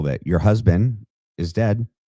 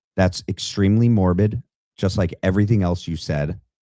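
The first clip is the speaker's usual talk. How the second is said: normal talking voice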